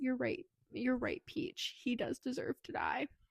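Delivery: soft, breathy whisper under the breath. Retelling a book scene where a character leaves the house: retelling a whisper. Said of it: "he whispers".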